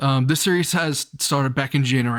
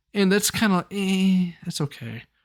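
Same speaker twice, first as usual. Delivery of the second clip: plain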